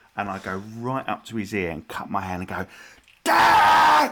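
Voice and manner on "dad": very high, full-lung shout, stretched long. Acting out a prank, shouting into the painter's ear: imitating a loud shout. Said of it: "as loud as I can".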